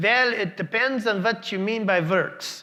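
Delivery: put-on German accent. Retelling a researcher's answer to his question, in the researcher's german accent. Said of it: "in his German accent".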